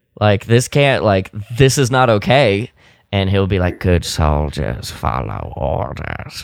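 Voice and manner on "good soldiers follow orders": very deep, slow, measured put-on soldier voice. Speaker acts out what he'll say to those trying to reason with him, imitating him in a put-on voice. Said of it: "in that particular voice".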